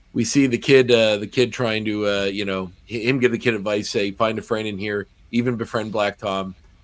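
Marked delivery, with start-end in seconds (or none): none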